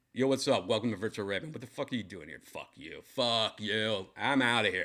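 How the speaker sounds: brash, rude, dismissive, obnoxious jerk attitude. Acting out the show's welcome as a jerk: pretend rude jerk attitude. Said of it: "What if I just become a dick?".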